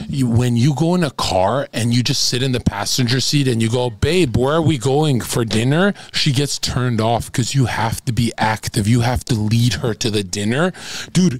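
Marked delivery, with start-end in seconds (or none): none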